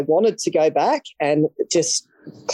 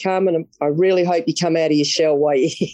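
sarcastic, pretending to mean it. Retelling what a friend said after the first night: imitating Tomo's sarcastic remark. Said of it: "He was being sarcastic".

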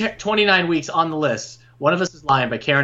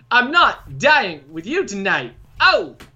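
pitched-up theatrical line reading with an added oh; 5 semitones higher than usual. Giving an alternate line reading of a title: Christopher Walken voice. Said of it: "You're just Chris Walken all of a sudden?".

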